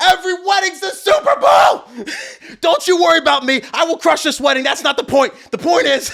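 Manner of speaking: play-acted, shrill, very high, frantic defensive outburst. Retelling arguing with a venue staffer who said calm down: imitating own freaking out. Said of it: "I started freaking out".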